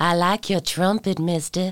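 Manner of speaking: put-on Deep South Southern Belle accent. Asked for a sentence, a podcast host says it in Southern Belle accent. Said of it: "I will say it in a Southern Belle accent".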